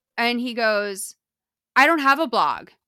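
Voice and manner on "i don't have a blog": loud, mean, rude, nasty snap. Retelling a stranger's reply to a fan saying hi: imitating a loud, mean retort. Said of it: "really loud and mean about it".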